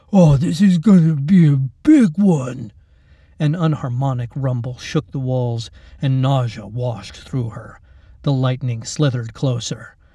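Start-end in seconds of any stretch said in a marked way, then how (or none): 0.1-2.7 smug, relishing, loud, slow gloating. Keith gloats in the dark as the monsters screech and roar. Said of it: "Keith gloated in the dark".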